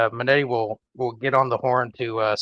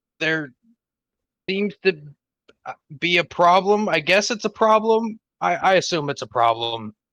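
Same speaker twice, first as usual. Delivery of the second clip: high, halting, very confused voice. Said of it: "in a very confused voice say".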